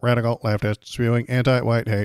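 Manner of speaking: stiff, mechanical robot voice. Reading quoted text aloud in a robot voice. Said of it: "So I have to speak it, I guess, in a robot voice".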